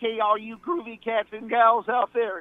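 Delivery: very high-pitched cartoon dog voice. Reading the top of a shop website in a Scooby voice: Scooby-Doo voice. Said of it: "do this in my Scooby voice".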